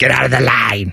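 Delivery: grumpy voice, low and creaky.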